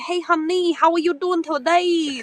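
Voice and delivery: put-on Vietnamese accent on every word. Teasing another speaker about not having an accent: mock Vietnamese accent. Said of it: "That kinda accent".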